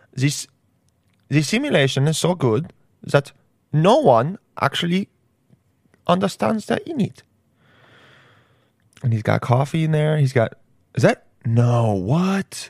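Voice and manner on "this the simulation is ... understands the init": put-on, laid-on German accent. Continuing the impression, suddenly switching accent: German-accented Elon Musk impression. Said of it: "and he's German all of a sudden".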